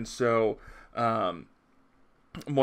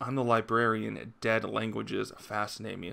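ordinary talk, nothing marked

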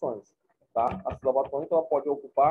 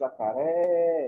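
stress held long on ré of jacaré. Teaching the stressed syllable in Portuguese: lengthened ré in jacaré. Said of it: "eu falei por mais tempo por é".

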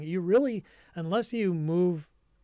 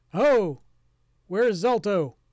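booming voice, higher and louder; 3 semitones higher, 7 dB louder than usual. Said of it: "a very loud voice call out".

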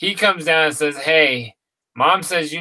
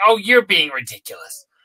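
weak, not-quite-right, slightly off voice; 2 semitones higher than usual. Retelling what a mother said about a fear of birds: imitating mom, not a good impression. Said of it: "that's not even a good impression of my mom".

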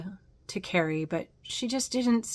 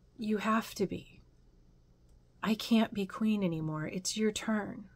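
soft, very tired, worn-out voice; 6 dB quieter than usual. A storyteller voices an aunt answering a hesitant aunt, very tired. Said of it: "And the other aunt sounded very tired and said".

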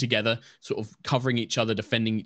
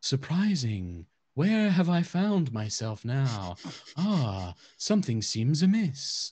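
slow, swooping, floating creature voice; 4 semitones higher than usual. Voicing a summoned flump that appears in the air: flump creature voice. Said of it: "and you just hear this, like".

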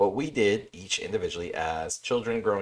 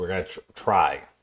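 heavy stress on try; 4 dB louder than usual. Podcast host announcing the plan for this episode: heavy stress on try. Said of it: "Heavy emphasis on the word try".

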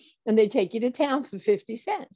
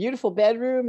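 usual speaking voice

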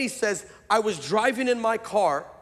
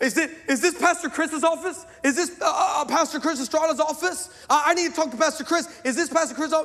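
mock-hysterical crying woman's voice, much higher pitch; 7 semitones higher than usual. Pastor retelling a woman who came into his office, imitating hysterical crying. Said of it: "but just hysterical".

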